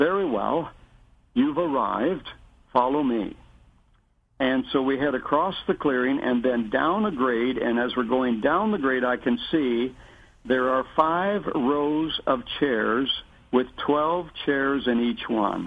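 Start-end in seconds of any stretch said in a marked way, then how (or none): 0.0-3.4 put-on heavy British accent. Retelling how a man greeted them on arrival, heavy British accent. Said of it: "he says in his very heavy British accent".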